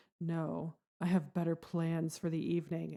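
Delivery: smooth, seductive, sultry delivery. Recounting a character's reply to Rook about staying for the party, imitating a sultry voice. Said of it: "gets on this really sultry voice".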